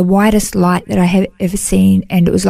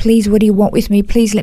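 put-on, acted pleading. Retelling kneeling in the light, the speaker reenacts pleading with it. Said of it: "And I am pleading with it".

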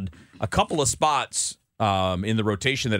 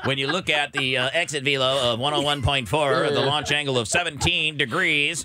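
put-on synthetic computer voice, higher pitch; 5 semitones higher than usual. Talking sports stats with co-hosts, a host reads out numbers in a computer voice. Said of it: "That was a computer voice".

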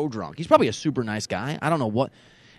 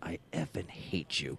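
mock drunk man's speech, lower and quieter; 8 semitones lower, 14 dB quieter than usual. Retelling what a drunk man said when he came up: imitating a drunk man. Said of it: "And he's wasted".

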